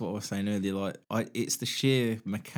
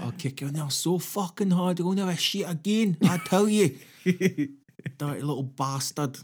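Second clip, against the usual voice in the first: put-on, raised, pitched-up Scottish accent, ranting; 8 semitones higher, 5 dB louder than usual. Repeating a quoted threat from a news story: scottish accent. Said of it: "That's a little Scottish".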